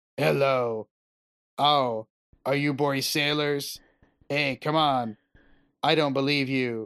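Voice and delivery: put-on flat monotone, every syllable same weight. Mocking how the game's main character delivers all his lines, as a flat Geralt impression, no emphasis. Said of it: "delivers everything with the exact same like passion of, you know, a depressed lunch lady on Valium. It's just like there is literally no emphasis".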